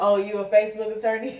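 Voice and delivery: ordinary delivery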